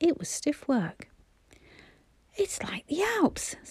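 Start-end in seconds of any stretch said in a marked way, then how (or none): 2.4-3.6 winded, breathless, breathy half-whispered gasping words. A narrator reads Bobby climbing a hill toward the tunnel, breathless. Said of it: "said Bobby breathlessly".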